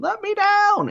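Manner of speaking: acted child's scream, pitched way up. Retelling a kid at Disneyland: imitating a child screaming.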